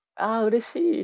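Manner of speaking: overjoyed very high-pitched exclamation. Retelling how someone seen on Twitter reacted when approached, imitating a delighted reply. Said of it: "すごいねすごい喜んでくださって".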